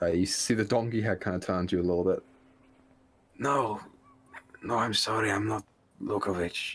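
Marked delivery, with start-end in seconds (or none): 3.4-6.8 voice holding back tears, stifled crying. Voicing a prisoner in a donkey head who answers a whisper: character stifling tears. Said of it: "the faint stifles of a cry".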